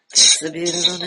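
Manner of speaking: calm, soothing storyteller voice. Telling another speaker they sound like Mister Rogers: Mister Rogers voice. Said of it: "a Mister Rogers voice".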